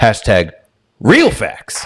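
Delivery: put-on fiery, heated sports commentator voice. Reading out a tweet aimed at Terrell Owens: Stephen A impression. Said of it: "That was a great impression".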